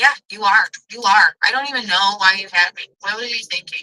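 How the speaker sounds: jeering, taunting, mocking, rubbing-it-in tone. Retelling lines said to mom while growing up: retelling own taunting. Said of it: "I became more and more taunting".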